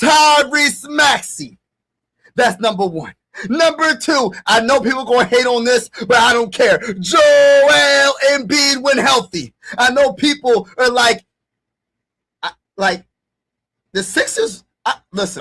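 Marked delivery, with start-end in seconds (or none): 9.8-15.4 excited, stumbling stutter, tripping over words. Ranking players and expecting people to disagree, with excited stuttering. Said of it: "I'm stuttering because I'm like so excited".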